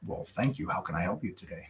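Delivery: very quiet, soft, breathy professional phone voice. Retelling his reply to a woman commenting on his voice: straight phone voice. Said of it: "you just went into like straight phone voice".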